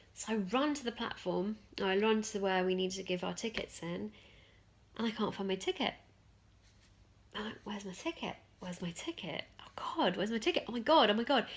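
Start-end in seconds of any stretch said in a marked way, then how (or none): 7.7-11.5 mock frantic, panicked fretting, looping over and over. Retelling not finding her ticket at the platform, acting out her own panic. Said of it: "And I started to really panic".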